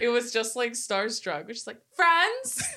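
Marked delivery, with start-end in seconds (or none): 1.9-2.6 put-on early-2000s teen girl voice, higher, louder. Quoting another movie line: Lizzie McGuire impression. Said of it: "I sounded just like her".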